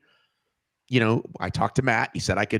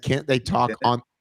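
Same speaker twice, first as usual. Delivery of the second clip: ordinary delivery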